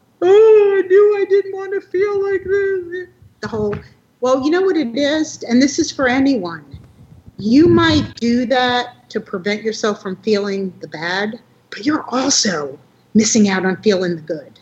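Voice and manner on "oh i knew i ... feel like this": put-on very high, loud, blubbering baby-like crying. Retelling how George cried out of nowhere: imitating George crying. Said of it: "just crying like a baby".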